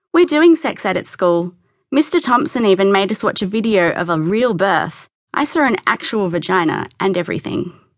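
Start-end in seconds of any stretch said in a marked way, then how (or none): none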